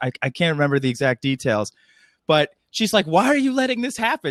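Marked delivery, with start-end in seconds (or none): 3.1-4.3 mock angry, very high-pitched, mad outburst. Retelling a deleted scene where Rey gets mad at Luke: imitating Rey getting mad. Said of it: "She gets all mad at Luke".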